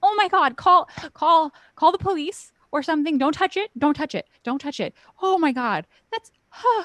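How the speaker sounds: put-on, very high, loud, frantic, panicked shrieks. Describing how she reacts when she comes outside, acting out her shriek. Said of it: "shrieks, and then she's just like".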